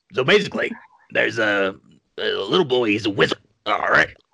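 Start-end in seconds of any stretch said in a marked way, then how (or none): 2.1-4.0 character voice with mouth full. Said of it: "I want you to do Beetlejuice while eating ice cream".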